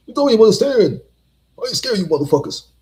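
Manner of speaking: shrill, rapid, loud outburst. Quoting a remembered comedian's catchphrase: imitating Bernie Mac. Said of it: "All Bernie Mac has said this".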